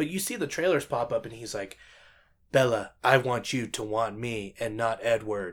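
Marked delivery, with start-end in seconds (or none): 2.5-5.5 mock emotionless line reading, slower. Mocking an actor's line to Bella in the movie trailers, imitating emotionless acting. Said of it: "There's no emotion going into this".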